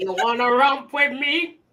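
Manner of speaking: very drawn-out, slow, deadly serious drawl. Repeating the other speaker's quote, imitating Ox from Belly. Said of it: "Ox from freaking Belly".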